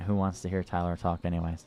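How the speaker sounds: ordinary talk, nothing marked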